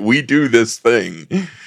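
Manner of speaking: imitated caveman speech. Retelling how two characters explain what happened to the dog: imitating caveman talk. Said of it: "explaining what happened to the dog in caveman talk".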